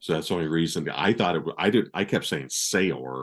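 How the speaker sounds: usual speaking voice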